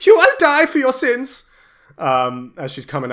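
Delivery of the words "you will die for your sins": very loud, high, shrill battle scream. Game master voicing a woman charging at a player with a war axe: screaming. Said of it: "she screams at you".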